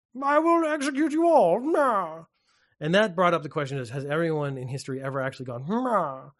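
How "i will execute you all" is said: put-on plummy posh British accent, very high pitch. Talking about his game character's voice lines, the speaker mimics a faux posh british accent. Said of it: "he's got this sort of like faux posh British accent".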